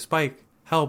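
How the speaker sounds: acted flat, emotionless tone. Retelling a scene where a mother calls her son for help: imitating a deadpan delivery. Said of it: "not even with any emotion, just very deadpan".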